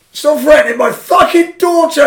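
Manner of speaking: shrill, booming, very loud, high shout. Quoting someone for the podcast, leaning back to shout: retelling a shout. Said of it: "if you're going to shout".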